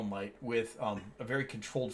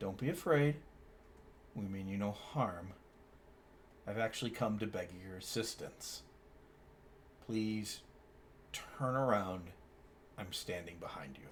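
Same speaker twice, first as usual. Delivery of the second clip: composed, even, calm, soft voice; 2 semitones lower, 5 dB quieter than usual. Narrator voicing a voice speaking into the listener's mind, calm telepathic voice. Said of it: "a calm voice tickles your mind".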